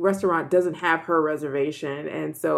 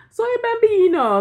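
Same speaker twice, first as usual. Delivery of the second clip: put-on crying little boy voice, higher and louder; 7 dB louder than usual. Retelling how the little boy kept crying in the episode: imitating Mario crying. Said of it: "he kept crying, like, in a, in Italian".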